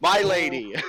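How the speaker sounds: screaming. Flinging burning material at enemies as an offering to a goddess: screaming.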